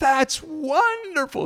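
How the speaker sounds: delighted, high, slow voice. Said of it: "just clapping her hands with delight".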